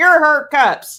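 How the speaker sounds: high, loud call, projected out.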